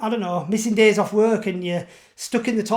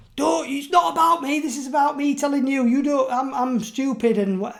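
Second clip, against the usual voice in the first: put-on furious, wild, high-pitched rant, words tripping over themselves; 5 semitones higher than usual. Retelling mum's reply when asked why she smokes: imitating mum going wild. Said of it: "she went wild".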